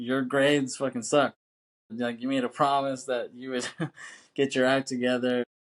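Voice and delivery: put-on angry, pissed-off scolding rant. Speaker acting out an argument, voicing the woman's side, imitating her anger. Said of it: "She's pissed off".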